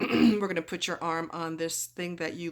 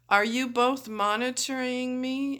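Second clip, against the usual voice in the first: drowsy, slow, drawn-out, drugged-sounding voice pitched up; 7 semitones higher than usual. Acting out asking the nurses a question while high, retelling drugged slow talk. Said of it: "So I'm talking slow".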